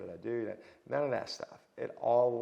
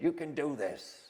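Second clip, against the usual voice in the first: horrible, put-on New York accent, pitched up; 5 semitones higher than usual. Quoting what he would always say to him: horrible new york accent. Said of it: "horrible New York accent, I know".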